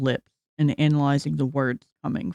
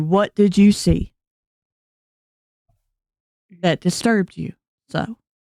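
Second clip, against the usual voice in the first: put-on sweet-toned Southern accent; 4 semitones higher, 5 dB louder than usual. Voicing a character who asks the players what they saw: sweet southern voice. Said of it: "The sweet southern voice in front of you asked you".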